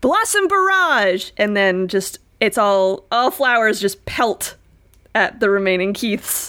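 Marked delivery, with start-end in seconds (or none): 0.0-1.3 loud battle shout. Voicing a character who casts an attack on mud men: shouting an attack name. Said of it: "and just shouts".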